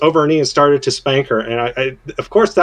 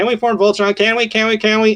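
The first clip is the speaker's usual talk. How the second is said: high, insistent, pestering, repeated begging tone; 6 semitones higher than usual. Describing a voltron episode, the speaker is imitating the team begging the castle's ward. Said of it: "literally begging the one dude".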